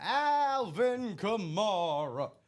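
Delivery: TV announcer intro voice, first name drawn out. Congratulating a winner, calling out his name in Don Pardo announcer voice. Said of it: "I'm saying him like Don Pardo, like he's hosting S N L".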